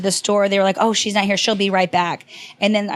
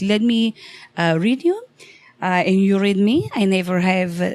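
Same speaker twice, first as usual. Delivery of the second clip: put-on very thick, heavy Greek accent. Retelling a man asking the speaker for a reading, in a thick Greek accent. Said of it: "he has this very thick Greek accent".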